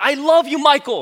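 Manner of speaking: all-out, very high, shrill screaming yell. Retelling how a louder friend yelled at a celebrity passing by: imitating a friend yelling. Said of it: "as loud as he can, okay, he yells out".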